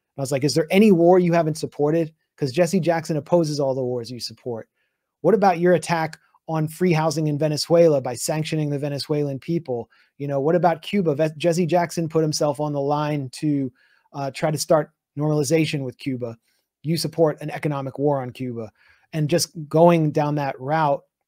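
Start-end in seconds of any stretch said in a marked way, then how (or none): none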